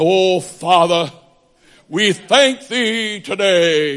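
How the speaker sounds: slow, prayerful delivery with "today" drawn out. Act out how we pray religious prayers, in a supposed King James prayer voice. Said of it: "we pray in what we suppose is a King James voice".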